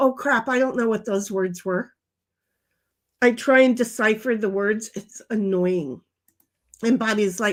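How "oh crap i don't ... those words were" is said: ordinary talk, nothing marked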